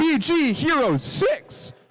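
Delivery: very slow, drawn-out cracking voice. Announcing teams for a qualification match: voice cracking. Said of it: "my voice cracked".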